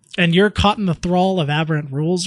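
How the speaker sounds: ordinary delivery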